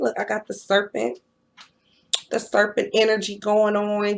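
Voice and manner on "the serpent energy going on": ordinary talk, nothing marked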